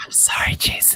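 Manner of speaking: soft, unvoiced, mock whisper.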